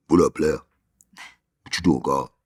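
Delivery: deep, very low-pitched voice. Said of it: "You do a good impression".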